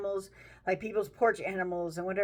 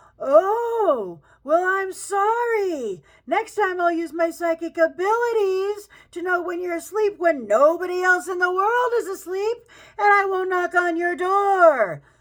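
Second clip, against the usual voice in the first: very loud, shrill, sarcastic yell with stretched "oh"; 10 semitones higher, 8 dB louder than usual. Retelling a reply yelled back through a door: retelling a sarcastic yell. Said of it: "I got super sarcastic, and I yell back".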